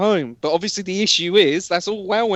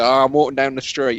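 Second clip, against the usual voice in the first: ordinary talk, nothing marked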